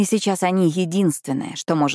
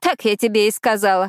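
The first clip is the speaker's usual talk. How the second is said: scornful, mocking, high-pitched snorting voice; 5 semitones higher than usual. A woman answers Almaz's question about secrets, mocking snort. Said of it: "насмешливо фыркает она".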